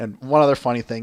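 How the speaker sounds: ordinary delivery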